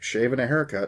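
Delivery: plain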